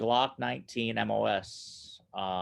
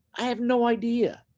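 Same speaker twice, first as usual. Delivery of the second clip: high, mock baffled voice. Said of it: "I'm like".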